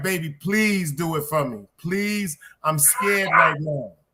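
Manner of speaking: mock pleading, begging, scared-sounding tone. Acting out a scared mother begging her son to save her: imitating a mother begging, scared. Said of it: "She like".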